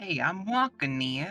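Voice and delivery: put-on Brooklyn accent. Asked how good their brooklyn accent is, trying it out in a brooklyn accent. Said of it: "How good is your Brooklyn accent?".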